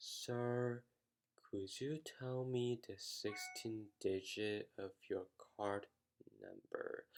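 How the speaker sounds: every word dragged out, painfully slow and soft. Retelling how a phone service agent talked to him, imitating very slow speech. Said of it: "He talked so slow. He was kind of like this".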